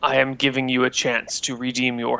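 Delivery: deep, weighty, low voice. A narrator voices a presence addressing the player character, in a low booming voice. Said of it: "you hear a low, booming voice".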